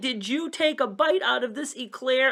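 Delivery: mock furious tone. Retelling confronting the kid over the bitten eclair: re-enacting an angry accusation. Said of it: "I was so mad".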